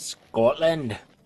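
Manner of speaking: bad exaggerated Scottish accent. Saying where Intharth would come from: bad Scottish accent on Scotland. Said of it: "I probably shouldn't say it like that".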